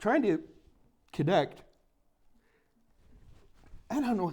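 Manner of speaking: talking mid-yawn. A speaker apologizes for being yawny and talks while yawning. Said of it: "I'm so yawny today".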